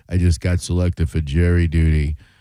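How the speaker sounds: dry, monotone comic delivery. Mocking a caller's pick for greatest comedian: Stephen Wright deadpan impression. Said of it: "The Mister Mister Deadpan".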